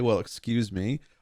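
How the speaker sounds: snotty, rude, offhand tossed-off delivery. Quoting Link from the TV show, who talks like a prick: Link impression, snotty. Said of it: "after I heard him say".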